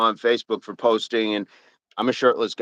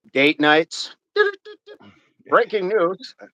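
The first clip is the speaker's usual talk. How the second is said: put-on old-timey 1950s announcer voice, swooping pitch; 8 semitones higher than usual. Speaker drops into a joke bit: old-timey 1950s announcer voice. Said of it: "the nineteen fifties announcer, old timey voice".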